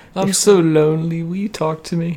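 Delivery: silly, lonely-sounding, high, slow put-on sad voice. Acting out what a co-host will answer, in a mock-lonely silly voice. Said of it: "Very silly today".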